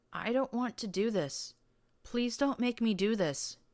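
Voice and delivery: tiny, high, terrified, frightened whimpering. Reading a story aloud, voicing a male character's reply, whimpering. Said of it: "he whimpered".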